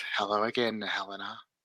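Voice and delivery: hushed, dark, ominous half-whisper, very quiet. Narrating a scene, voicing the coven leader greeting Helena, half-whispery dark voice. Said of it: "She says in her sort of whispery, dark voice".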